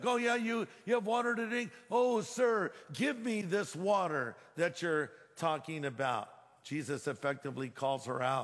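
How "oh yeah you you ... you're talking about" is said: snide, disbelieving, mocking sarcasm. Acting out the woman at the well answering Jesus: sarcastic. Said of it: "She's being sarcastic".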